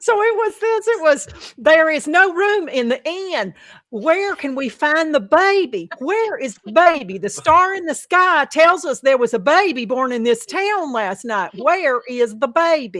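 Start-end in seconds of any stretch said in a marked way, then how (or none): 1.6-13.0 put-on thick, heavy Southern US accent. Retelling a play's lines as they were performed, heavy southern accent. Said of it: "heavy Southern accents".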